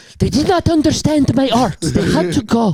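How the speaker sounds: put-on broken-English voice. Retelling how a woman from Pennsylvania answers about her parents, imitating her broken-English voice. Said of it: "but talks like that".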